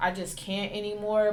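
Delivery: ordinary delivery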